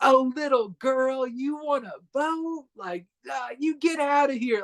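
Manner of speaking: put-on condescending, mocking jeer, pitched very high. Describing a caricatured man mocking a young girl, imitating a mocking taunt. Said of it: "making fun of like this young girl".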